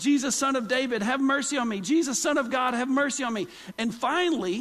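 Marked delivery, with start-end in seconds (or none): 0.0-3.5 urgent, contained crying-out voice. Retelling a Bible story, acting out Bartimaeus: imitating Bartimaeus yelling. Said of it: "he's yelling".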